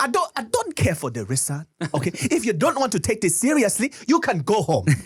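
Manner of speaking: put-on very high, scolding, lecturing tone. Retelling how a classmate lectured him in study group: imitating a classmate lecturing. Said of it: "lecturing me".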